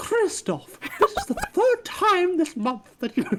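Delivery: put-on very high, swooping, posh RP accent. Asked for Queen's English, reading a scene's line: Mrs. Babbage in Queen's English. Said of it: "I want Queen's Queen's English here".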